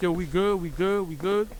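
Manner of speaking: usual speaking voice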